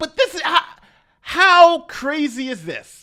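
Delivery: words broken by laughter. Speaker who fought off attackers, talking about the police, laughing while talking. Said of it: "I'm sorry, I'm laughing".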